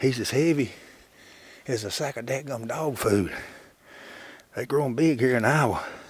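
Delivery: panting and out of breath while talking. A hunter talks about the bird he just got, panting. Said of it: "(hunter panting)".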